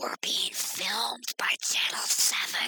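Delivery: hissing stage whisper under the breath. A woman addresses Father Nichols in a hissed stage whisper. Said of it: "hissed a woman in a stage whisper".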